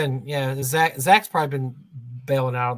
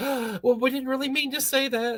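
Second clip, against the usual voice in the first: mock jittery, shaky, worried, nervous high-pitched voice; 8 semitones higher, 4 dB quieter than usual. Retelling how Zach reacts when Skeeter gets crazy: imitating Zach nervous and shaky. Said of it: "He gets so nervous when Skeeter gets crazy".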